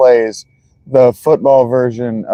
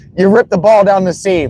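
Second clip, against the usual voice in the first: mock sarcastic, needling, snarky pitched-up remark; 7 semitones higher than usual. Retelling a commercial scene: imitating Tom Brady, snarky. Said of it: "all snarky like that".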